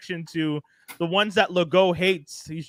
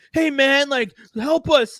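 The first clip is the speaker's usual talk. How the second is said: mock desperate, high-pitched, drawn-out panicked voice; 8 semitones higher, 5 dB louder than usual. Retelling a man at the er asking for help, in a mock panicked plea. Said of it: "and like panicked".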